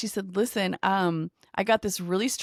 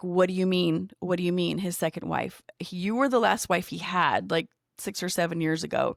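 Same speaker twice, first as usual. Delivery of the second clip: plain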